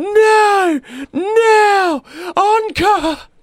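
mock drunken wail, shrill, very high, loud, drawn out. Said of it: "really drunk guy screaming at the top of his lungs".

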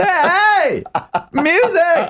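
very high, animated, swooping sing-song voice. Teasing the other speaker by imitating their voice: imitating a high voice. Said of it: "Your voice does get very high when you talk about music".

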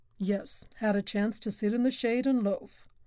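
ordinary delivery

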